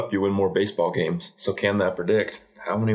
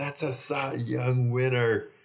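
put-on excited, proud father voice, shouting; 5 semitones higher, 4 dB quieter than usual. Retelling a father's reaction to his son's first home run: imitating a dad shouting. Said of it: "his dad starts shouting".

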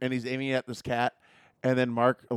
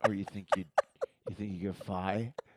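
creepy put-on voice, lower pitch and quieter; 3 semitones lower, 6 dB quieter than usual. Retelling a movie scene, quoting Henry: creepy Henry voice. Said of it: "he creepily".

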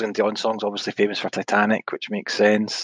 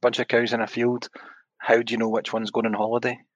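usual speaking voice

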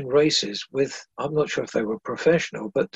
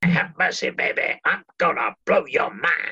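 put-on jive-talking DJ voice. Doing an impression for the interviewer: Emperor Roscoe impression. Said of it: "can I do my Emperor Roscoe impression for you?".

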